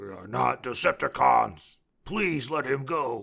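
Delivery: words pushed out as a growl. Speaker retells a scene, voicing Prime after two Autobots block Bumblebee; Prime growling impression. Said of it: "he growls like".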